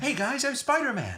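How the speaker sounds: high-pitched put-on American accent. Showing how the impression is done: high-pitched American Spider-Man voice. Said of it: "it's just American, but high-pitched".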